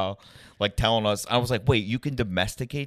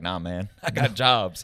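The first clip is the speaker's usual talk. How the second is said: slow, put-on drawled Southern accent; 3 semitones lower than usual. Retelling what the raccoon catcher said, put-on Southern accent. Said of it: "I don't know why I made him sound Southern".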